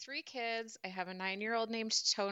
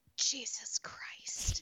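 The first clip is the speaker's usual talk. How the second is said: put-on whispered, hushed small little-girl voice; 5 semitones higher than usual. Retelling a child's reaction to stinging cream: imitating a child whispering.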